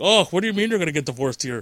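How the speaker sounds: clumsy, very bad attempt at a Canadian accent. Joking about getting divorced in Canada, in the worst Canadian accent ever. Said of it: "That's the worst Canadian accent ever".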